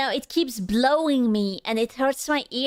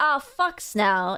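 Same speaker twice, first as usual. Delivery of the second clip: normal talking voice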